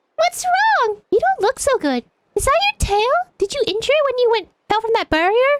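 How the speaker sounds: sugary, cutesy uwu voice. Voicing a game character asking an injured little creature: uwu voice. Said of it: "I'll do an uwu voice".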